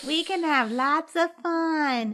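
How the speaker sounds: creepy, high, slow, drawn-out voice. Imitating Pride threatening Riza like The Shining twins: soft creepy Pride voice. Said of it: "Soft and creepy".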